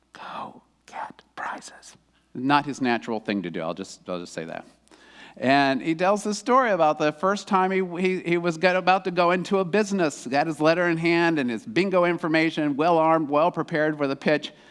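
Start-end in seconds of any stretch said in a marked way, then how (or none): 0.1-1.9 hushed whisper, much quieter and slower. Telling a man's story, the speaker voices the little voice inside him, whispering.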